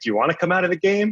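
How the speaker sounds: high, mock patronizing tone, talking down. Recalling his dad coming out to him on the mound: imitating dad's condescending voice. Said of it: "in that condescending voice".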